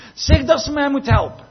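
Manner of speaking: very high, loud, frazzled, stressed-out, exasperated pleading tone. Acting out Martha's request before the Lord answers her, mock-stressed Martha. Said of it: "een soort van stressige... Het potje kookt over toon".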